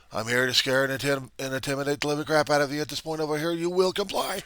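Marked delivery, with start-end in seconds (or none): 3.5-4.4 intimidating, very high, screamed delivery. Acting out a bully with power over others: acting as a screaming bully. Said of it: "I'm gonna be yelling and screaming like crazy".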